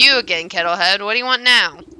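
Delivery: loud cackling creature voice. A familiar voice calls out from the tree's knotholes: cackling voice. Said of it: "A familiar ca- cackling voice floats above the others".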